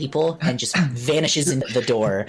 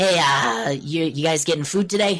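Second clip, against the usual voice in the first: nasally halfling voice, higher; 4 semitones higher than usual. Game master voices a halfling greeting the party at an inn, nasally halfling voice. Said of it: "you hear the nasally voice of the halfling".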